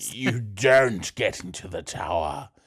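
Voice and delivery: cold, menacing, most sinister-sounding voice. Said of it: "in the most sinister way possible".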